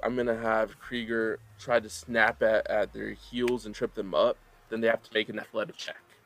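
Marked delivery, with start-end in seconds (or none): none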